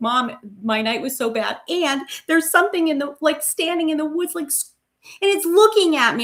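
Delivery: high, weepy, upset, tearful crying voice. Retelling the daughter coming home late after a bad night: imitating daughter crying. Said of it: "crying and she's like".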